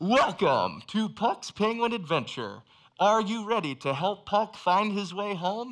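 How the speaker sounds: loud, high theme-park ride-announcer voice. Retelling a ride's opening announcement, imitating a ride announcer. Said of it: "this announcer comes online, and he's like".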